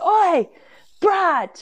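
put-on shrill, very high shout. Retelling how a woman leaned over the banister and called to Brad: retelling a shout. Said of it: "she actually shouted".

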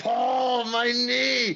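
shrill, very high, piercing yell, pitched way up. Retelling a match where Brock Lesnar yells about his knee: imitating Brock Lesnar yelling. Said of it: "he's yelling at Heyman".

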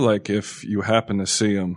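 ordinary delivery

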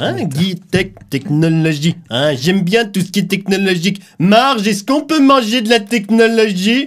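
high-pitched cartoon child voice. Asked to imitate Bart Simpson watching a livestream: Bart Simpson impression. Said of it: "fais une imitation de Bart Simpson".

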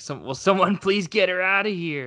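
desperate pleading voice. Retelling the general's line from the movie: imitating a desperate plea. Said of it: "'cause he sounds so desperate".

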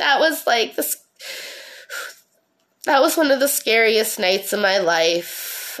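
holding back tears, pushing through without crying. Recalling being taken from home by police officers, holding back tears. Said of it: "trying not to cry".

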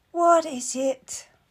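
sleepy, drowsy voice. Reading a story, a woman woken by knocking at her door calls out in a sleepy voice. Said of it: "a sleepy voice calls out".

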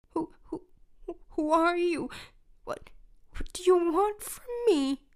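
quavering, wavering voice. Narrator reading Choopy's reply to an unseen voice, trembling voice. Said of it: "Responds Choopy with a trembling voice".

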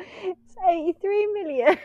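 laughing and giggling through words. Revealing the answer while unable to stop: laughing while talking. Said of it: "I'm laughing. I can't stop".

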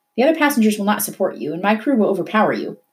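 plain, matter-of-fact delivery, no drama. Narrator reads a ship captain's reply to a passenger, matter-of-fact. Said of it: "he said matter-of-factly".

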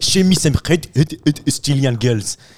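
imitated French accent. Quoting an excited young fella after France scores: imitated French accent. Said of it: "goes like this in the French accent".

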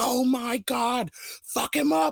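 very high-pitched, stretched, drawn-out shriek. Retelling what she could hear from the house: re-enacting own screaming. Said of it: "whatever it is me screaming".

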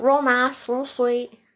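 high Southern country accent. Describing a play partner, slipping into the country accent used with patients. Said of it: "It's my hospital voice coming out".

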